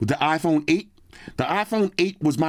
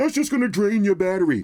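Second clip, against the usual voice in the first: mocking put-on voice, pitched higher; 7 semitones higher than usual. Reading out comments dismissing always on display: imitating a hater voice. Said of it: "That's my hater voice".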